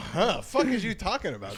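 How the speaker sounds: put-on baffled reaction. Acting out how people react to a bit: imitating a baffled audience. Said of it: "Kinda makes people go".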